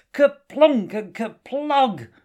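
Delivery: very high, loud shouted incantation. Narrator reads Joseph casting a spell during a magic duel with Clara: shouted out loud. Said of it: "Joseph shouted out loud".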